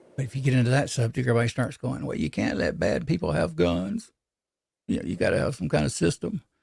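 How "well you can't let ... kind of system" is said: rough, creaky, rasping politician voice. Acting out what people say about gun checks: Bill Clinton impression. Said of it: "that's my Bill Clinton impression".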